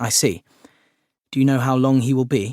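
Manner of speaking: ordinary delivery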